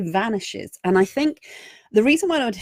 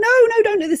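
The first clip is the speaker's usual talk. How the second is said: very high, loud, shrill shouting voice; 13 semitones higher, 5 dB louder than usual. Speaker describing the fear monster in your head, imitating it shouting. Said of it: "to start shouting at you".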